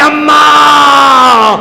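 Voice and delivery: high, loud, long drawn-out cry.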